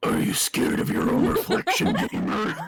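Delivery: creepy, eerie character voice. Voicing a character who teases the reader in a game scene: creepy voice. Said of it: "Should I give him a creepy voice?".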